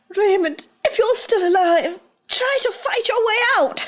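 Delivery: desperate all-out yell, very high, full volume. Playing a tabletop character, shouting to an ally who may still be alive: shouting as loud as possible. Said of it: "I just shout as uh, loud as I can".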